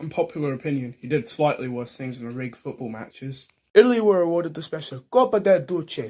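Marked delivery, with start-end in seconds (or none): 5.1-6.1 loud, high, showy put-on Italian accent. Telling football history, naming a trophy in a put-on Italian accent. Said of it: "that's my best Italian accent".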